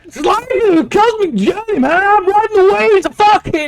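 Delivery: put-on shouting and screaming. Acting out a man in a story, shouting and screaming. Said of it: "as he's like shouting and screaming".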